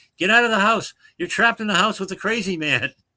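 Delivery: put-on very high-pitched, shrill shout. Retelling a joke where the sponsor yells at the caller: imitating a sponsor yelling. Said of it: "the sponsor starts yelling at him".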